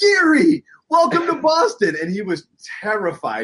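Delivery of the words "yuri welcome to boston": very high, loud, thrilled, drawn-out delivery. Retelling running into someone who had just signed, acting out an excited greeting. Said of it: "I was so excited".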